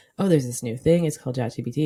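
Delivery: ordinary delivery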